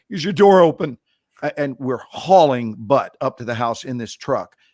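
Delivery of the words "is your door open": acted loud calling as if from far away. Retelling yelling to a man on his roof while rushing to his house; retelling a yell. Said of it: "I'm yelling at him".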